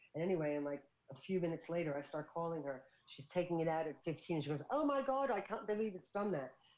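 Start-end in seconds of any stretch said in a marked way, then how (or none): 4.7-6.5 put-on English accent. Retelling a woman's reaction after taking the treatment out of her hair, English accent. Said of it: "I like that English accent".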